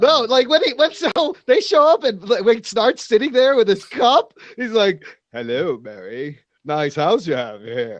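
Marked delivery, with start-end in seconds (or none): 5.3-8.0 very low, over-the-top smarmy voice. Imitating a TV character greeting Mary in a smug way: Captain Cold voice. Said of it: "likes my Captain Cold voice".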